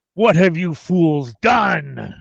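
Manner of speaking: demanding authoritative tone. In a game session, the landlord character confronts the group in a booming voice. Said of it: "A booming voice rings out through the room".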